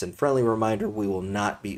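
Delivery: cracking, breaking voice mid-sentence. Closing a livestream with a friendly reminder, voice cracking. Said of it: "my voice just cracked".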